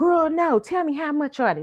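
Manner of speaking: put-on high-pitched grandma-style voice. Retelling a chat about meet-and-greet prices, imitating grandma's way of talking. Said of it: "That's how my grandma talk".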